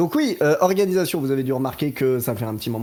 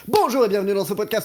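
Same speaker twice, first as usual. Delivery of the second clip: rushed, fast, pitched-up TV presenter voice; 7 semitones higher than usual. Recreating a podcast opening done in a put-on fast TV-presenter voice. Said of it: "prendre la voix télé euh, très très vite en mode euh".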